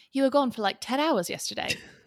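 put-on English accent. Retelling a line said to someone, redone in an english accent. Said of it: "Do do you have a good English okay. accent".

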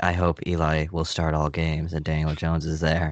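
flat, level monotone with no rise. Defending a team owner's remark, imitating how he said it, John Mara monotone impression. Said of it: "the way he said it in such a monotone voice".

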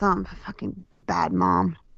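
hushed, soft mutter under the breath. Retelling what they call themselves daily: imitating muttering under breath. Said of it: "under my breath".

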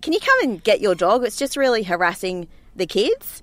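plain

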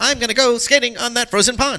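put-on high old-fashioned talking voice.

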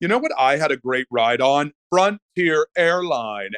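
chatty, casual, relaxed talkative delivery. Demonstrating how he talks in public like a subliminal message, quite loud. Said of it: "if I just go quite loudly".

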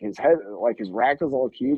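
ordinary talk, nothing marked

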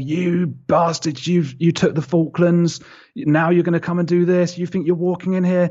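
shrill, very high, furious, raging scream. Retelling what a man screamed at him, imitating a man screaming. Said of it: "he was screaming and going".

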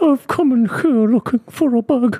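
put-on old Scottish woman voice. Speaker doing an impression for listeners, old Scottish widow voice. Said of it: "Sounds like an old Scottish widow".

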